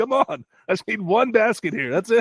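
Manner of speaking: put-on yelling. Retelling yelling at the tv during a game for a bet: retelling yelling at the tv. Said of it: "I was yelling at my T V".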